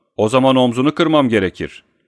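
snapped back, curt and sharp. Scott answers Tim Cannon's warning while working at the dogs, snapping back. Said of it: "diye tersleyerek".

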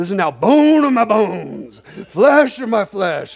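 mock gushing, high, loud, over-the-top thrilled. Retelling how a man acted out Adam, imitating Adam's over-the-top excitement. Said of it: "Adam is like over the top excited".

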